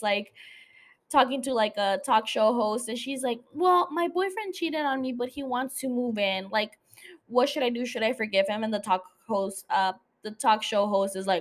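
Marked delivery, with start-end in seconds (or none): none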